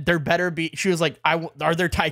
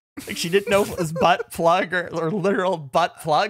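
ordinary talk

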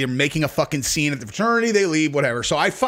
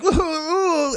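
high-pitched mock drunk whooping. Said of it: "She acts all like".

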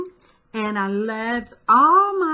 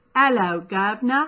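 imitation British accent. An American speaker tries out a British greeting, put-on British accent. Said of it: "Not in a British accent".

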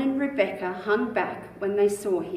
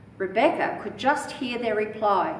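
ordinary delivery, nothing marked

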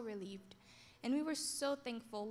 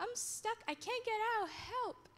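very high scream, almost crying; 10 semitones higher than usual. Retelling her cousin stuck inside and calling for help, re-enacting a near-crying scream. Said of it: "she was like almost crying and screaming".

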